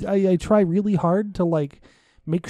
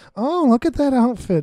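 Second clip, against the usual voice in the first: faux-polite, fake-nice, pitched-up put-on tone; 5 semitones higher, 4 dB louder than usual. Showing how someone compliments a person they dislike, fake-nice tone. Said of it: "trying to be nice about it".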